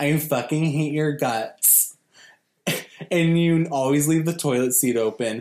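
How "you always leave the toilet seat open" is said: ordinary talk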